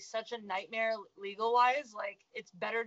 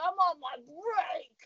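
imitated talking with full mouth; 6 semitones higher than usual. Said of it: "mouthful of a hot dog".

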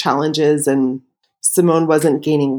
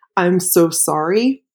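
very slow, deliberate, drawn-out, measured delivery. Retelling surgery preparation, the speaker repeats what a woman said: retelling very slow speech. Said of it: "said very slowly".

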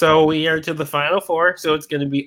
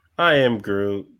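put-on sad creature voice, lower; 7 semitones lower than usual. Voting in a character matchup, saying the pick as Groot: mock-sad Groot voice. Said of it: "that was Groot being sad".

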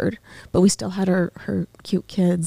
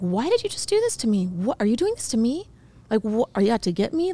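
play-acted furious outburst, wildly swooping pitch; 3 semitones higher than usual. Retelling blaming God after a sister's death: retelling own angry words. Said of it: "I was just really, really angry".

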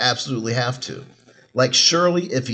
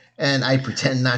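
normal talking voice

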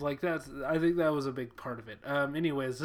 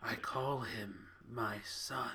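very quiet, soft, gravelly rasp; 4 semitones lower, 9 dB quieter than usual. Discussing a film scene, quoting its last line in a gravelly John Hurt impression. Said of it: "You just have to have a gravelly voice".

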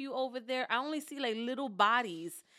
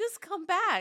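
put-on hysterical crying, higher and louder; 7 semitones higher, 5 dB louder than usual. Retelling watching relatives in the ocean: imitating her own hysterical crying. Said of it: "I'm hysterical crying. I'm like".

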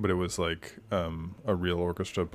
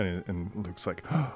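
ordinary talk, nothing marked

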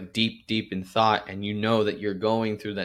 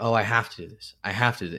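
mock weary, burdened, complaining tone. Imitating how most people list their tasks: imitating a tired, burdened tone. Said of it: "seems like you're kinda, like, tired already".

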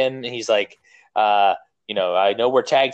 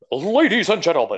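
raised-pitch arena ring announcer delivery; 6 semitones higher than usual. Starting a recap of the Royal Rumble, doing a Howard Finkel impression. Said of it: "that was my Howard Finkel impression".

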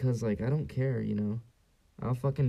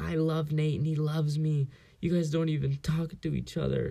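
high, slow, tearful crying outburst through sobs; 5 semitones higher than usual. Retelling a show scene where a girl argues with her parents, imitating someone crying. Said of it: "she's like crying".

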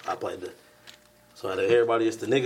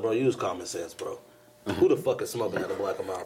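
plain

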